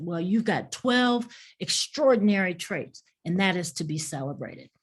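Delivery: normal talking voice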